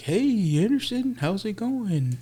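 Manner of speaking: very high-pitched, sing-song delivery. Retelling a best friend's dad greeting him at the donut shop, voice kind of like Yogi Bear. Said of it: "In that voice".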